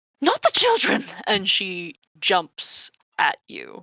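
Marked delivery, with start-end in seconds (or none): 0.2-1.0 very high, loud, ghostly spectral shout. A game master voicing a spectral woman who turns on the players, shouting. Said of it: "she shouts".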